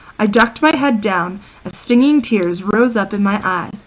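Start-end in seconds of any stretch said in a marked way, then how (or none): none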